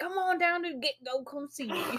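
put-on Tennessee country accent, soft and high. Retelling what Ryan would say in Tennessee; Ryan's put-on country accent. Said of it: "put on his country accent".

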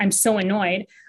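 normal talking voice

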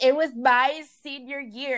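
mock crying through the words, slow and sobbing. Retelling what a sister said after the team lost, imitating her sobbing. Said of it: "she started sobbing".

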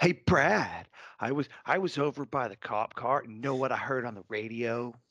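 put-on childish first-grader voice. Retelling how a man told Brad the news, in a childish first-grader voice. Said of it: "he sounded like he was a first grader".

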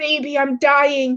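coughing out the words. [name], shot in the chest, speaks to Justin, coughing out the words. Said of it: "[name] coughs out".

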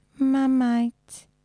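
put-on cutesy baby voice. Retelling how a man said the word Marmite: cutesy baby voice. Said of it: "he started talking in a baby voice. And he was saying Marmite like this".

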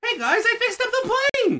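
put-on very high, childlike little kid voice. Telling a Sonic story together, voicing Tails in a little kid voice. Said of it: "He like a little kid".

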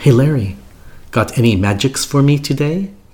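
put-on Israeli accent, pitched high. Retelling how she would come up and ask you for magic, imitating her Israeli accent. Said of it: "in her Israeli awesome accent".

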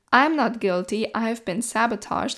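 usual speaking voice

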